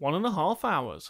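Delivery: ordinary talk, nothing marked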